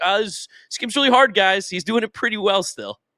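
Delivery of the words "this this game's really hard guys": high, loud mock whine. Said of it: "It's like".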